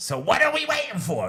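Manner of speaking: very high voice, delivered movie-scene style. Retelling the hospital scene from Rocky, imitating Mickey from Rocky. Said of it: "Then Mickey goes".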